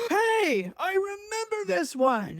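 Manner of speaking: mock old man yell.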